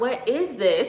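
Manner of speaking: overwhelmed, swamped, overstimulated sounding voice. Retelling own reaction to a cousin's greeting, imitating own overwhelmed self. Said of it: "but I was overstimulated".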